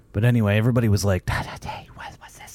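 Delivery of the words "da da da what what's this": hushed whisper with tittering. Retelling how everybody on the set reacted: imitating people whispering. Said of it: "Everybody's whispering and tittering around".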